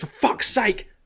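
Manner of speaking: furious, exasperated outburst, very high yelp. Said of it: "[name] when he's playing that game and he gets really mad".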